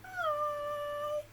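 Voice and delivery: high pitch. A teacher leading children in a greeting game says hello as high as possible, high pitch. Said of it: "get your lowest voice out".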